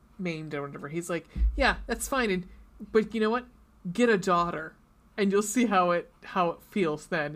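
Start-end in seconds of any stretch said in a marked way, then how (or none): none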